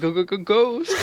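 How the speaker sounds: high cartoon dog voice, swooping throughout. Telling a spooky story to a group, imagining the cartoon's voice lines, in a Scooby-Doo voice. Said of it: "this Scooby Doo voice".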